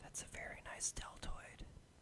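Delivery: very quiet, breathy, hushed whisper. Acting out a dude at the gym: mock whispering sweet nothings. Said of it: "starts whispering sweet nothings into your ear".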